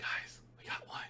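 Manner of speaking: hushed, barely audible whisper. Speaking in character to the rest of the group, whispering. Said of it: "I'm whispering to like the group".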